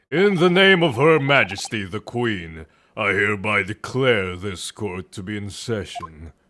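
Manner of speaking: very deep voice, pushed as low as possible. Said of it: "That's as deep as I can go".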